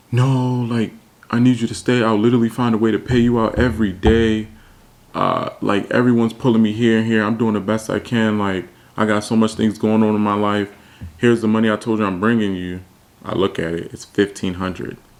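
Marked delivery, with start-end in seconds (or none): 0.1-12.8 put-on tearful, crying voice, higher pitch. Retelling how Hank begged to stay: imitating someone crying. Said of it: "started crying".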